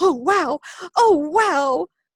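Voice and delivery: put-on wide-eyed wonder, very high, very slow, drawn-out wow. Retelling watching the water bearers as a newbie: imitating own past excitement. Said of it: "kept bouncing up and down on my heels".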